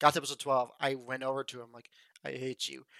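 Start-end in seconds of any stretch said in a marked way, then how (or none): 2.2-2.8 mock crying, soft, tearful and reproachful. Retelling what was said to a brother after a sad episode: retelling own tearful line. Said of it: "I just have swollen eyes, and there's tears streaming down".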